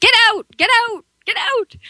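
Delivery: very high, shrill, repeated yelling. Telling a story, the speaker acts out the woman yelling at the thing: impression of a woman yelling. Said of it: "that's my best impression ever".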